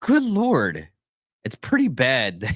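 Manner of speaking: talking through bursts of laughter, high and swooping. Reacting to the story just read, the speaker talks while laughing. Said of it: "I'm sorry I'm laughing".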